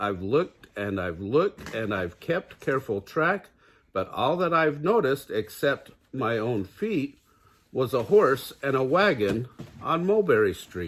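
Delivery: ordinary delivery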